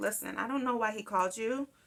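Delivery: put-on calm, quiet, even, controlled delivery. Recounting speaking to the officer while livid and shaking, retelling a calm reply. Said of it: "But I said calmly to the officer".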